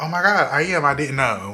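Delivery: mock sarcastic, snarky tone. Acting out how the speaker would reply: sarcastic, snarky tone. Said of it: "sarcastic, snarky way".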